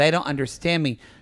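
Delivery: ordinary delivery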